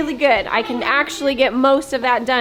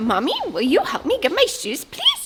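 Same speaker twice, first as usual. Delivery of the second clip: sweet, high, squeaky, squealy little mouse voice; 5 semitones higher than usual. Speaker imitates a child asking nicely, in a high-pitched squealy mouse voice. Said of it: "this high-pitched, squealy, sweet little mouse voice".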